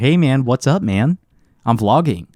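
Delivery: slow, put-on American accent in vlogger style. Imagining vlogging while filming people: put-on american accent. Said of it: "I'll speak like with an American accent and everything".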